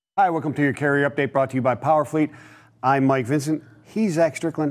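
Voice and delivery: fast rattled-off speech. Host opening a carrier update with his co-host, speaking fast. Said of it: "I don't know why I'm speaking so fast".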